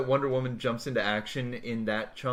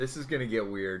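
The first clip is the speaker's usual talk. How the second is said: ordinary talk, nothing marked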